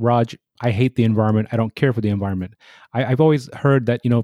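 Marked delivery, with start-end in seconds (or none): none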